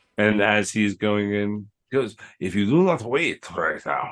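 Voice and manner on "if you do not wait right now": slipping into a put-on French accent. Voicing a character going into battle: French accent. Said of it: "I went into a French accent".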